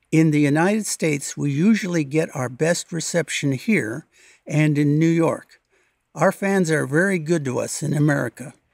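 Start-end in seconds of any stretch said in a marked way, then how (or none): none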